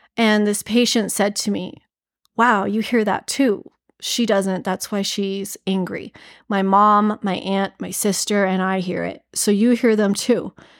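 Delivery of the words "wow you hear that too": usual speaking voice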